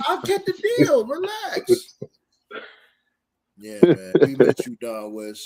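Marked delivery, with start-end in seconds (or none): 0.1-2.0 very high, pushed-up pitchman voice. Retelling how Don West pushed deals: imitating Don West. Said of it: "he'll be like".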